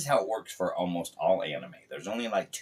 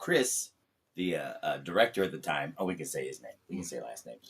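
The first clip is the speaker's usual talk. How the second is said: plain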